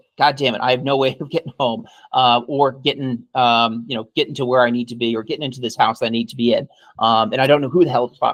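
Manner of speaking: ordinary talk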